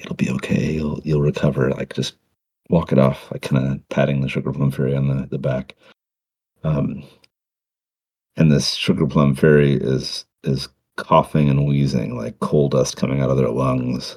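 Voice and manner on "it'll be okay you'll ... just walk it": whispering, hushed, comforting elf voice. Voicing an elf comforting the sugar plum fairy, whispering. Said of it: "kinda whisper".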